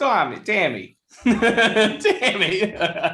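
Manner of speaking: very high-pitched put-on Boston accent. Asked to try an accent and say a name, putting on a Boston accent. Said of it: "can you do a Boston accent?".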